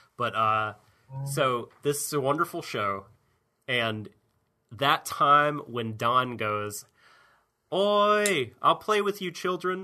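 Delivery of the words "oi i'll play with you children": voice jumps an octave, very high, with stretched "oi". Recalling a scene from a show, imitating Don as his voice jumps an octave. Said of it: "his voice went up an octave".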